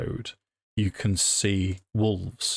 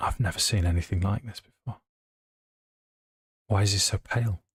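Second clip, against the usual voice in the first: hushed, quiet whispering. Game master answering as a character asked who the stranger is, whispering. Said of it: "she'll sort of whisper".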